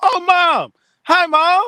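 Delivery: very high, very slow, drawn-out shouting. Greeting a mother who is nearby on the call: yelling a greeting. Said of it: "Why are you yelling?".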